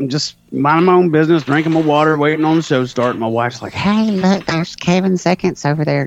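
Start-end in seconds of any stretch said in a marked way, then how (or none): 3.7-6.1 fake, pitched-up put-on female voice. Speaker retells what their wife said to them: put-on female voice. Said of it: "that's just my female voice".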